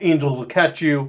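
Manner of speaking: ordinary talk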